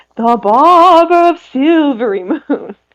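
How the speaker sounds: eerie put-on spooky voice, slow and high. Retelling what a woman said about last night's encounter, in a spooky voice. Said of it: "she adds the appropriate spooky voice".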